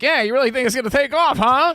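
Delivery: very high, skeptical, chuckling jab. Retelling a talk-show host chuckling at a guest: imitating Conan O'Brien chuckling skeptically. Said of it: "Conan's sort of, like, chuckling at him".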